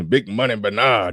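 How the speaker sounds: put-on aged, old-timer old man voice. Signing off a listener shout-out, in Ronaldo Ray old man voice. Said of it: "In my old man voice".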